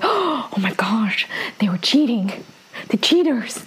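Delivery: put-on crowd-like murmuring. Retelling a game scene, voicing the crowd murmuring to themselves, mock murmuring. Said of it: "murmuring to themselves".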